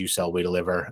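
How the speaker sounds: plain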